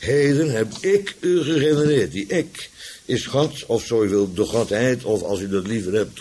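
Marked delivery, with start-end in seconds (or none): 0.0-2.1 heavy weight leaned on ik. Repeating a quoted line, now with the emphasis on ik. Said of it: "Nu met de nadruk op ik".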